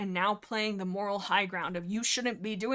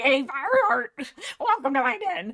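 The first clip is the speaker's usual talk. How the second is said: put-on elderly old woman character voice; 5 semitones higher, 8 dB louder than usual. Retelling a scene from the book as Yellowfang: put-on old woman voice.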